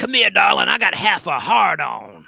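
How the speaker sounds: loud and rough come-on voice. Retelling a story where Jonathan Harris imitates Redd Foxx: Redd Foxx impression. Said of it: "This is Jonathan Harris doing an impression of Red Fox".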